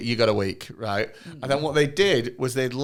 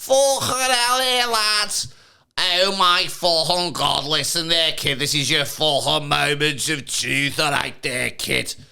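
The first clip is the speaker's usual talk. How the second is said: very bad put-on Scouse accent; 4 semitones higher, 3 dB louder than usual. Chatting about a TV programme, doing a bad Scouse accent. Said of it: "the worst Scouse accent I've heard".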